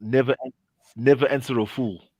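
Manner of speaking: ordinary talk, nothing marked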